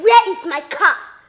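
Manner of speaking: very loud, furious angry yell. Calling for someone and demanding the missing car: shouting angrily. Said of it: "Why are you shouting?".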